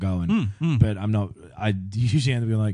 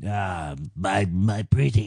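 very slow, lingering delivery, every word drawn out. Acting out Littlefinger creeping up to Sansa: Littlefinger impression. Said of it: "Littlefinger fucking scuttles up".

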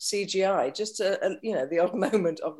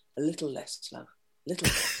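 soft, hushed, breathy near-whisper; 5 semitones lower, 5 dB quieter than usual. Retelling notes given during acting, imitating Ken. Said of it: "every time Ken would come up and he goes".

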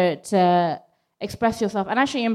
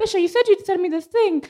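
very high-pitched, disappointed, put-on tone; 10 semitones higher than usual. Acting out what the other speaker might say to them: imitating someone in a high voice. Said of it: "I don't know why my tone went so high for you".

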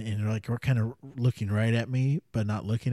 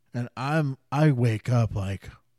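ordinary talk

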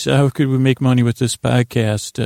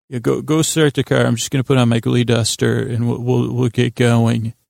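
ordinary talk

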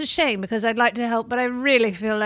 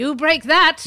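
slow, loud angry yelling. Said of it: "he would yell at me".

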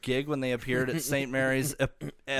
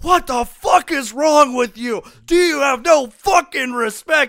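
shrill, very loud, high-pitched screaming at full blast; 11 semitones higher, 11 dB louder than usual. Retelling a store employee's outburst: imitating an employee screaming. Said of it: "just started fucking screaming at me".

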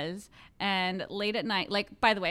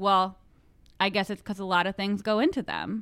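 put-on deadpan delivery; 3 dB louder than usual. Retelling her answer to a question on Leno: imitating a deadpan reply. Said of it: "stone cold look on her face".

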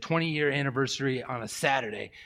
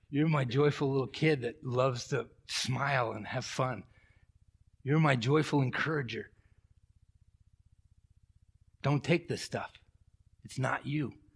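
put-on soft, gentle whisper. Retelling what a gentle inner voice told him: imitating a gentle whisper. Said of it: "this gentle whisper of the Spirit".

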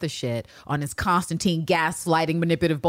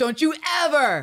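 put-on very angry voice, higher; 9 semitones higher than usual. Retelling a scene where Carolyn chastises Eve: imitating Carolyn sounding really angry. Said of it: "make believe I'm sounding really angry".

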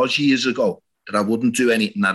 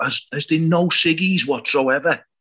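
high-pitched mock shout, carrying across a room; 5 semitones higher than usual. Retelling how someone in a flat asked for a cigarette: imitating someone shouting. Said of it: "he just shouted out".

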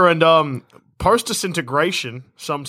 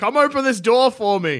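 loud yelling; 8 semitones higher than usual. Telling a story, the speaker voices a character at a door, yelling. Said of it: "Why were you yelling?".

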